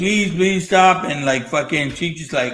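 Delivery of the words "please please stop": put-on tearful crying, begging tone. Retelling a movie scene where a wife is left behind: imitating someone crying. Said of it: "and she's fucking crying, saying".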